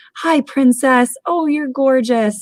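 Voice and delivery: high, slow, gushing delivery. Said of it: "that person that would walk by and say".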